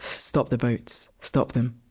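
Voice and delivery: hushed, measured, low, slow, quiet delivery. Trying a slogan to hear how it sounds, low and quiet. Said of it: "you were saying it lower and more quietly. How does this sound?".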